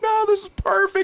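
very high, chipper, mock cheerful reassuring tone. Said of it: "He's like".

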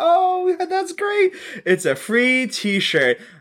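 acted-out scream. Describing a film's opening, where Trish wins a radio prize: mock screaming. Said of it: "She's screaming".

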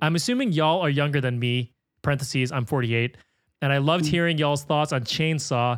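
ordinary delivery

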